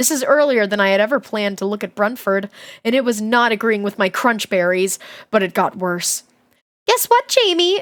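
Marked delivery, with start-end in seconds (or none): 6.9-7.8 very high, overly happy, worryingly cheerful voice. Narrator reads the aunt's line to Jamie, all happy in a worrying voice. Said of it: "all happy in that voice that makes you worry".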